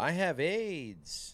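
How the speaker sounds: very high voice with the word aids drawn out. Showing the co-hosts the Hanks impression before the episode: Tom Hanks impression. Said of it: "That's the Hanks impression".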